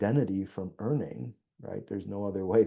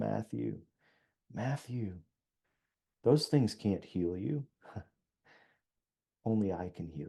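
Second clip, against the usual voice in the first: soft, gentle, tender, compassionate voice; 5 dB quieter than usual. Speaker recounts God speaking in their heart, retelling compassionate words. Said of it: "God just said to me with such compassion".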